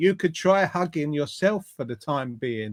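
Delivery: normal talking voice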